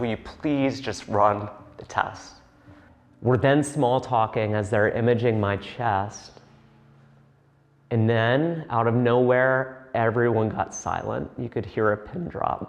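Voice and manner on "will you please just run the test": mock strained voice through gritted teeth, tearful, quieter. Retelling a plea to the nurse to run the test: through gritted teeth, near tears. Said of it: "through gritted teeth and tears welling up".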